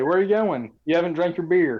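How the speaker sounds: extremely courteous tone. Blocking a character who tries to leave the bar: very polite. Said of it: "just very politely say".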